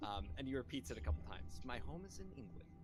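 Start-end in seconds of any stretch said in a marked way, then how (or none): 1.6-2.7 soft, feigned-casual female gnome voice. Repeating the gnome's line a second time, female gnome voice. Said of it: "in that same um, female uh, uh, gnome voice".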